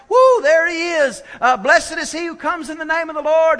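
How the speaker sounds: whole crowd cheering and shouting. Retelling Jesus riding in on the donkey, imitating a crowd shouting. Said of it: "everybody's shouting".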